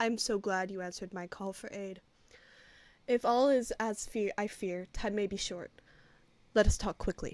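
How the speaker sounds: steady, level, serene, very calm voice. Game master as the high priest greeting the party, Yovir Glandon's calm, even voice. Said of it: "speaks with a very calm, even voice".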